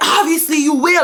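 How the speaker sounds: mock, shrill, high-pitched screaming. Retelling what a boy said in a school fight, imitating someone screaming. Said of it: "he's screaming".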